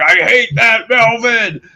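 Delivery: obnoxious, very high-pitched, loud, drawn-out scream. Describing a film villain's face and noises: Bozo screaming. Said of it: "makes those noises when he's screaming".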